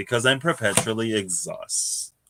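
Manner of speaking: normal talking voice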